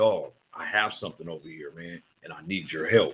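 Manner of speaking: low, hushed half-whisper, all breath, no voice. Retelling what the man in the next cell said at the window: half-whispering. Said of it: "he was whispering".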